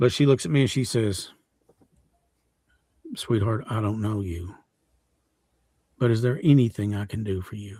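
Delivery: holding back tears, voice close to breaking. Retelling how an elderly lady comforted the speaker, holding back tears. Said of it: "I'm gonna try to get through this without breaking up".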